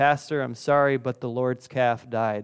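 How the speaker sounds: ordinary talk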